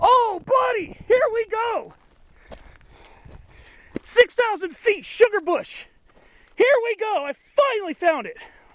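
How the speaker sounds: very high, loud, thrilled excited outburst. Speaker finally finds the sugar bush at six thousand feet, excited voice. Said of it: "my tone of voice is going to be different".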